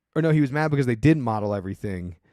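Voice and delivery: normal talking voice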